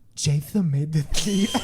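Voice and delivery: fake super-sexy voice, loud. Imagining a DJ's producer tag for a friend, mock sexy voice. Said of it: "like a super sexy voice being like".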